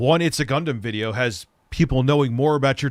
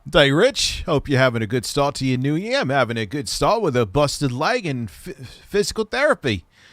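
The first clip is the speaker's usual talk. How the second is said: bad, fake, put-on Australian accent. Speaker greets Rich for the new year, in a bad Australian accent. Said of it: "Why am I talking with a bad Australian accent?".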